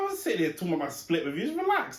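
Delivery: high, fast, exasperated rant.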